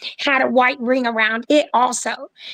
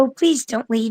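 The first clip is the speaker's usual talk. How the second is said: hushed whispering. Retelling a quiet plea to a creature leaving: whispering. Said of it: "so I whispered".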